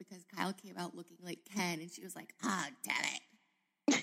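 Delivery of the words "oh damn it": put-on, even more pissed-off voice. Retelling Big Kathy's reaction to the baby's looks: imitating Big Kathy even more pissed. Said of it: "Big Kathy was even more pissed".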